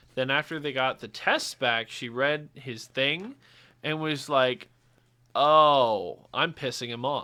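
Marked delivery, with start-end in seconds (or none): 5.4-7.3 put-on slow toddler baby talk, drawn-out "oh". Retelling what a coworker said on reading the results: imitating in baby talk. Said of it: "not as three-year-old baby talk as I did just now".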